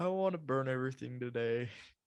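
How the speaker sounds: usual speaking voice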